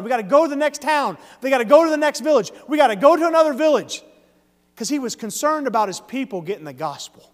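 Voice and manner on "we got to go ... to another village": mock yelling, acted-out shouting. Retelling how he looked at the graduates and kept yelling, acting out the yell. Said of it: "And he kept yelling".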